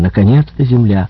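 ordinary delivery

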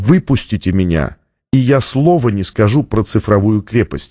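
plain reading voice

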